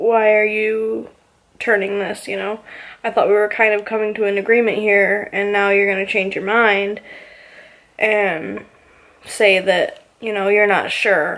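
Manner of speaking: normal talking voice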